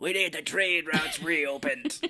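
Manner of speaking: voice of a lifelong smoker. Describing a character, speaker quotes how he sounds: Kiefer Sutherland smoker's voice. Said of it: "you get that voice by smoking forever".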